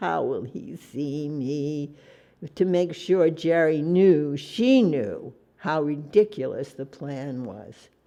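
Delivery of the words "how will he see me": drawn-out whine, quieter and slower. Narrating a woman showing Jerry how ridiculous the plan is: whiny, drawn-out words. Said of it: "She whined, dragging out the words".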